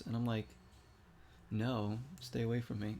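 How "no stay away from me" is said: ordinary delivery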